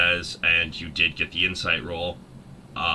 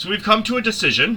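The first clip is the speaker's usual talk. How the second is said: very high, slightly raised, loud yell; 4 dB louder than usual. Voicing a wizard calling toward a box: raising his voice to yell. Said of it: "raises his voice a little bit to yell towards the box".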